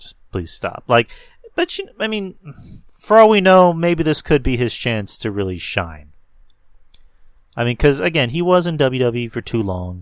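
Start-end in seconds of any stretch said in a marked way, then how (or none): 0.0-0.8 put-on whispered, rude, dismissive tone. Retelling what they said to a friend who defended a wrestler: retelling a rude dismissal. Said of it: "was kinda being a dick".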